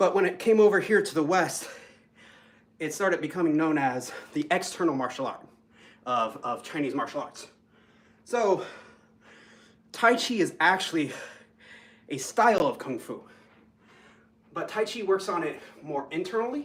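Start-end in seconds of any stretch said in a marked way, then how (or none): 8.2-16.6 winded, breathless, still catching breath. Explaining tai chi while admitting being a little out of shape, out of breath. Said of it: "I'm trying to catch my breath".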